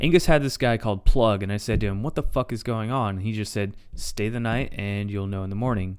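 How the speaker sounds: ordinary delivery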